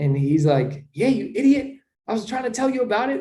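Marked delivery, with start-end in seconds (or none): 0.9-3.2 very high, super excited, hyped-up voice. Retelling a friend's reply on a phone call: imitating someone super hyped. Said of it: "he was super hyped about it".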